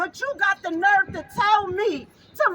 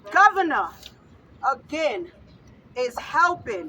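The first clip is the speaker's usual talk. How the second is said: angry and upset, dropped to very low voice; 7 semitones lower than usual. A mother whose son died speaks about the governor, upset. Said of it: "I'm sorry, guys".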